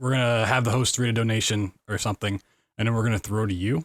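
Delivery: ordinary delivery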